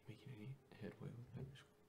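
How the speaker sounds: whispering. Leaning in to ask another character about their progress: whispering in character. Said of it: "lean in and, like, whisper this to her".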